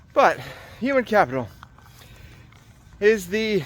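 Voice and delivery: winded, breathless. Speaker recording a video on a run, starting a topic, out of breath. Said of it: "I'm out of breath".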